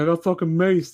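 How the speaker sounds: mock tearful, high, sobbing, crying wail. Retelling a friend's phone call after getting maced: imitating a friend crying. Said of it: "he called me up crying".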